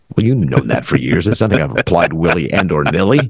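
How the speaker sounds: derisive, cynical, mocking delivery. Replying to someone who has known this for years, in a cynical, mocking tone. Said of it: "you say it in the most cynical, mocking tone".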